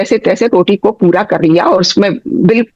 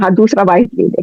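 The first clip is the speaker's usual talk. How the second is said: ordinary delivery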